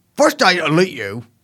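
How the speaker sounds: put-on odd, bizarre hybrid English-American accent. Reading a quote as an impression of Andrew Tate. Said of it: "impression of Andrew Tate in his bizarre English American accent".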